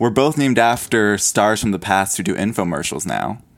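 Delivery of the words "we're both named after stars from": usual speaking voice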